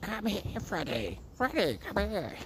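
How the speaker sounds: slow high-pitched cackling. Mocking dog owners calling their dogs: Wicked Witch of the North cackle. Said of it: "they have to sound like the Wicked Witch of the North".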